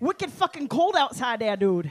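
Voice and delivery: local Vermont accent with New England drawl. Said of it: "when I do my Vermonter".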